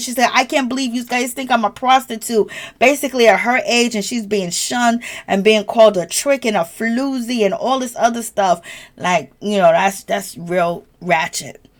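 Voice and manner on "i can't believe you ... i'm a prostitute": weeping through the words, tearful, acted. Retelling a reality show scene where a cast member cries: imitating Karen crying. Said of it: "she starts crying".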